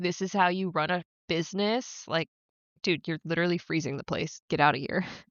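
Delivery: imitated annoyed man's voice. Retelling a scene where a man scolds a shop owner: imitating an annoyed man. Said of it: "the man gets so annoyed".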